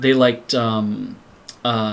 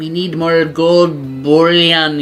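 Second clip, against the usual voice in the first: slow, raised, unusual alien overlord villain voice; 5 semitones higher, 7 dB louder than usual. Describing the main aliens, the speaker quotes one: alien villain impression. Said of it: "impression of the guy who is the um".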